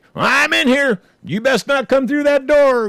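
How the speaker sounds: put-on very high, loud, menacing and threatening voice. Acting out warning a possible burglar through the door, in a mock-threatening voice. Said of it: "in your most threatening voice".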